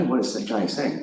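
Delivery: ordinary talk, nothing marked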